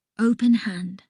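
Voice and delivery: ordinary talk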